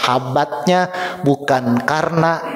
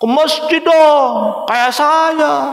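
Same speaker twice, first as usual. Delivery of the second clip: very high, arrogant, smug, boastful voice; 13 semitones higher, 4 dB louder than usual. Speaker demonstrating the wrong way to invite others, arrogant, boastful tone. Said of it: "Beda nada mengajak sombong".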